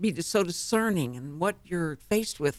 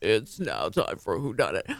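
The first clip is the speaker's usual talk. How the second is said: radio announcer voice, much lower; 8 semitones lower than usual. Recounting what a man says when he gets in there, the speaker uses a radio announcer voice. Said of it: "That kind of beautiful radio voice".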